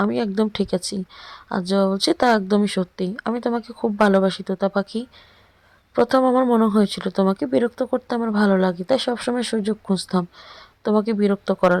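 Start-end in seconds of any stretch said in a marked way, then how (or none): none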